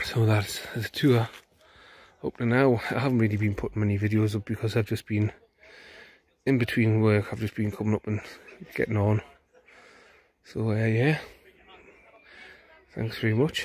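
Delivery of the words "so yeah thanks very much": out of breath, slower. Ending a video tour and thanking viewers, out of breath. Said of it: "I'm absolutely out of breath here".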